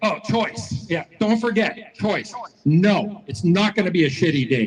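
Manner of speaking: ordinary talk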